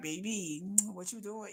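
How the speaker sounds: very soft, hushed, sweet and loving tone. Imitating a korean boyfriend calling on the phone: imitating hushed tones. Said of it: "they just would talk to me in hushed tones".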